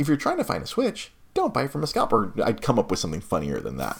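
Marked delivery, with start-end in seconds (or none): 0.0-2.3 sarcastic, high, sing-song friendly store rep voice. Acting out a planned video skit as the game rep: sarcastic video game rep. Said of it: "me being our sarcastic video game rep".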